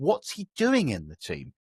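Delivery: ordinary talk, nothing marked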